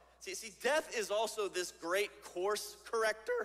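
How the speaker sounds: voice cracking and breaking mid-line. Speaker making point two of a morning talk on verses, voice cracking. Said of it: "Voice crack".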